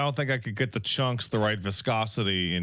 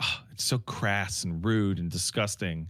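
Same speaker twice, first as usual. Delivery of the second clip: put-on prim, disapproving motherly parent voice; 4 semitones lower than usual. Retelling a parent's complaint about The Simpsons: imitating mom disapproving. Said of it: "My mom hated my dad and me watching The Simpsons".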